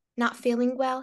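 ordinary talk

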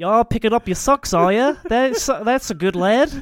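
put-on Australian accent. Recounting how they used to talk to themself, in an australian accent. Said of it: "talking to myself with an Australian accent".

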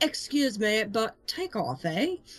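terrible put-on British accent. Joking about a historical battle cry, speaker says it in a bad british accent. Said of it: "That is absolutely the worst accent I've ever heard".

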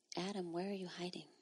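mock whispering. Retelling what he hears said to him: imitating a whisper. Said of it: "And then he whispers".

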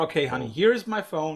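ordinary talk, nothing marked

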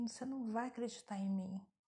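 ordinary talk, nothing marked

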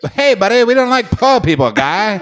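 very high-pitched, put-on Canadian accent. Imitating a canadian woman seen at the airport: mocking canadian accent. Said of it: "She's like".

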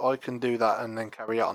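ordinary talk, nothing marked

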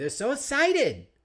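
put-on very high, excited little-kid voice. Retelling how a kid says it: imitating a kid's excited voice. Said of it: "or as my kid would say".

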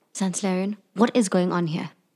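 whispering. Asking another character in the scene what is happening: whispering. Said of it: "you're whispering".

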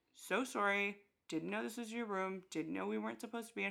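put-on even, calm, polite, reasonable explaining tone. Retelling being screamed at by a stranger at a party, retelling a calm apology. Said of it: "calmly trying to explain".

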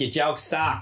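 fake, put-on Boston accent. Acting out a girl who never finds the jokes funny: put-on Boston accent. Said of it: "that's my Boston accent".

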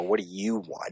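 smarmy, with strong stress on you. Retelling a scene where a character speaks to Luthor: mock-smarmy stress on you. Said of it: "emphasizing the you as if she's being very smarmy".

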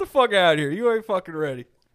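put-on pissed-off referee voice, fed up. Retelling what a boxing ref told a fighter who kept falling: imitating a pissed-off ref. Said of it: "the ref sounded like he was getting kinda pissed off".

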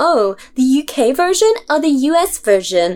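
slow, odd, put-on American accent. Complaining about what people ask when The Office comes up: weird American accent. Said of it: "I said that in like weird American accent".

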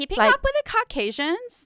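very high voice, swooping pitch. Saying the show's segment name, in a put-on caucasian voice. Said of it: "you say it in a Caucasian voice".

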